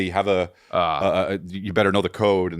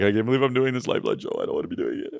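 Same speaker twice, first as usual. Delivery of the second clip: fake blubbering sobs, crying really hard; 3 semitones higher than usual. Acting out someone crying hard in the bathroom: imitating Anthony crying. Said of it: "goes in there and cries really hard".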